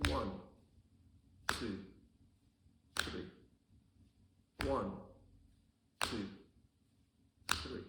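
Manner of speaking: slow, deliberate, measured three-beat counting. Demonstrating a three-beat timing for slow songs, counting slowly. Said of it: "So I go slowly again".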